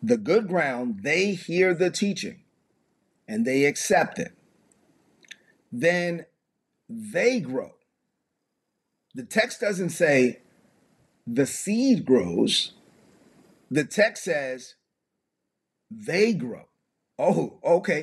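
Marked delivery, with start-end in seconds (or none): 0.0-7.7 slow, unhurried reading voice. Speaker reading a passage aloud to listeners, reading slowly. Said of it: "let me read this slowly".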